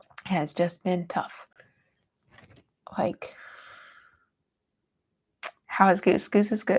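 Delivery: laughing while crying, tearful. Talking to viewers about a stressful time: crying while laughing. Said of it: "I'm also crying just 'cause I'm stressed".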